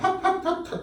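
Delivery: insincere put-on laugh. Speaker acting out a character greeting an acquaintance, with a fake polite laugh. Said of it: "가식적인 웃음이지".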